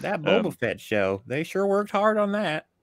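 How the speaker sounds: put-on American Southern accent. Asked to do their Southern accent, the speaker riffs in a Southern accent. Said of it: "Do your Southern accent".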